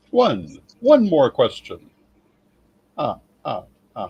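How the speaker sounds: character voice with ah-ah-ah laugh. Repeating that there is time for one more question: impression of the Count. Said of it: "That was a very good impression of the Count".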